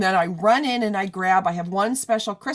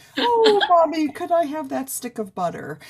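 high dog voice, voice raised; 7 semitones higher than usual. Speaker showing how their golden retriever talks in their head: Sally the dog's voice. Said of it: "she just talks like this in my head".

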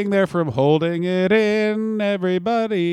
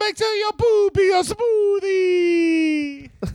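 high, slow shouted mock Italian accent. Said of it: "Dominic Tonucci".

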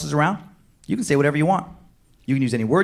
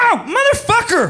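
acted-out, very high, loud, pained outburst; 6 dB louder than usual. Speaker retells a man smashing his toes on the way down: retelling a pained swear yell. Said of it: "one perfectly timed swear word rip".

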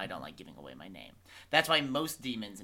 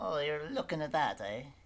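bad put-on Irish accent, higher pitch; 7 semitones higher than usual. Voicing an old man who talks about a dust storm: bad Irish accent. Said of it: "it's also bad Irish".

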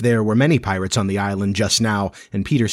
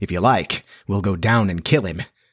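plain

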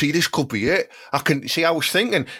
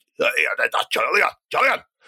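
put-on Scottish accent. Trying out regional accents on the name julian, in a scottish accent. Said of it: "Julian could be Scottish as well".

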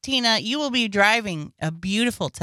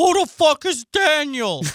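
put-on voice, higher pitch and louder; 6 semitones higher, 4 dB louder than usual. Imagining his reaction to the list, imitating his reaction. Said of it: "He's gonna be like".

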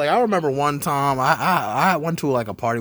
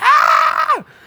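high, loud scream. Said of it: "just started screaming".

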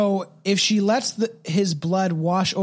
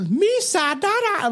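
exaggerated, higher-pitched alien voice with Jamaican accent; 10 semitones higher than usual. Showing how a cartoonish alien character talks: Jar Jar Binks voice. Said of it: "sounds like an alien Jamaican accent".

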